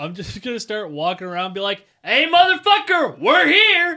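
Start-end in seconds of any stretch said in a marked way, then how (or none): 2.0-4.0 very loud, very high, drawn-out announcer-style holler. Told a contact will find them, a player shows how he'll announce himself, yelling. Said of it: "don't need to fucking yell like a dipshit".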